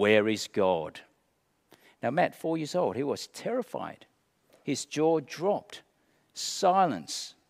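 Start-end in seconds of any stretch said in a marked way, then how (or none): 0.0-1.0 deep, low minister voice. Retelling a minister questioning four-year-old Matt: deep booming minister voice. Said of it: "with his deep, booming voice".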